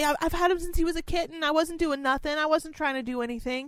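high, fast, whiny, defensive whine.

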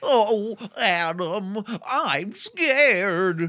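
high-pitched, little baby cartoon cat voice. Discussing He-Man voice acting, quoting Cringer speaking to Adam, in a Cringer voice. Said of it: "That's a really good Cringer".

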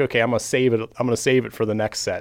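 ordinary delivery

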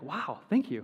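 heavily emphatic, every word leaned on. Retelling how the man on the call thanked them for waiting: imitating an emphatic thank you. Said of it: "he said it, like, so emphatic".

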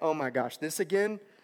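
ordinary talk, nothing marked

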